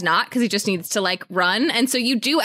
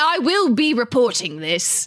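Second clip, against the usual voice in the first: put-on posh upper-class accent. Retelling a movie scene, quoting what the character says, in a posh voice. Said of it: "he sounds posh too".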